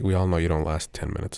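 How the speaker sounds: mumbling under breath. Acting out a character's reply in a scene: muttering under breath. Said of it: "mutter under my breath".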